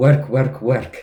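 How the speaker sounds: put-on loud, thick Romanian accent. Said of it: "in a thick Romanian accent goes".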